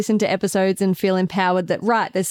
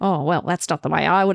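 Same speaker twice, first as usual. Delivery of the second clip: mumbled, half-swallowed words; 3 semitones lower than usual. Imitating the dad energy that is banned at home: imitating someone mumbling. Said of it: "mumbling like".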